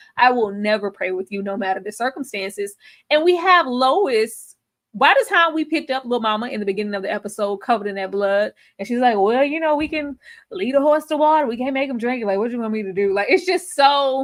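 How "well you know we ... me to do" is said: offhand, nonchalant, dismissive, tossed-off tone. Retelling what Lois said in the episode: imitating Lois, nonchalant. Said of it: "she's very nonchalant in her".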